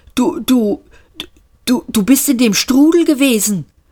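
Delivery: stammering. Gargravar's ghost addresses the newly arrived Seyfort, stammering. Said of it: "stammelte Gargravar".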